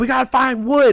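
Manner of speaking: high-pitched shouted yell. Retelling a moment with a stuck truck: imitating Arturo yelling. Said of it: "yelling at me, like".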